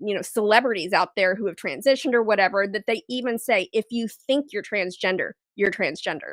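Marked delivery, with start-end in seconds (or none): none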